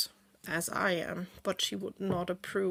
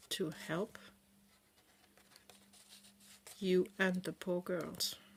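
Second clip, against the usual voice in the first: soft, half-whispered voice; 5 dB quieter than usual. Alice half-whispers back to a voice asking why she has come: half-whispering. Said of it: "Alice will just whisper back".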